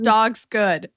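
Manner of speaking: put-on broken caveman speech. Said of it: "in, like, caveman speak".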